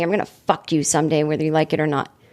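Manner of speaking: acted whispering. Retelling what he whispered after coming off stage: imitating someone whispering. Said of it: "and he whispers to me".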